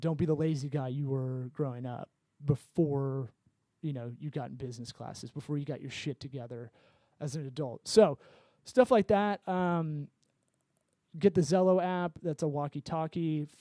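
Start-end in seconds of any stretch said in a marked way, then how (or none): none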